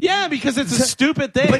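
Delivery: shrill yelling, voice pushed way up high. Arguing with a co-host on the show, yelling. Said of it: "Stop yelling at me".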